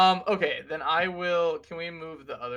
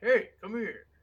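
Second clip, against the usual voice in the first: pitched-up call out, kept restrained; 5 semitones higher than usual. Calling up to others in character, as if from below: calling out, not full volume. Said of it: "not at the top of my lungs".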